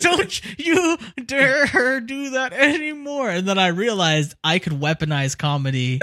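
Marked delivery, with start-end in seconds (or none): 0.0-3.3 mock very high, slow, laughing-yet-angry voice. Retelling a girl's warning after a joke during a game: imitating someone laughing angrily. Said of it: "laughing, but her face was angry".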